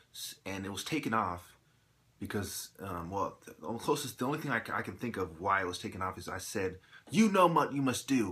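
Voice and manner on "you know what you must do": very angry, loud, high-pitched heated outburst. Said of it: "very angrily".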